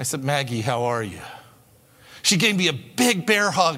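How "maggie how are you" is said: low, laid-on, put-on pastoral voice. The speaker retells greeting a woman at a conference, best pastoral voice. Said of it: "best pastoral voice".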